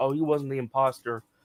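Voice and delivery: ordinary delivery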